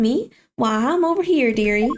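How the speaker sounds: put-on Southern accent. Voicing the character Delicia Scode greeting the boys, in Delicia Scode's southern accent. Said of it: "in my head this showed up with a uh southern accent".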